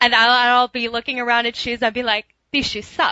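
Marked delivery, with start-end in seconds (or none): 2.5-3.1 put-on obsessive girl voice, higher pitch. Looking at shoes, saying it in Kelly's voice. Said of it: "I say it in Kelly's voice now".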